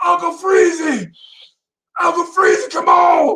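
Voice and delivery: play-acted screaming, very high. Retelling how a coach yelled a name across the gym: imitating someone screaming a name. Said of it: "He's screaming".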